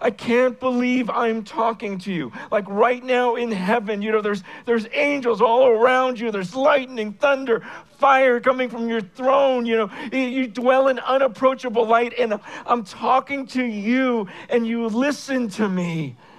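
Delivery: mock crying voice, tearful and weeping. Retelling own private prayer to God, imitating own crying prayer. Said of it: "crying, going".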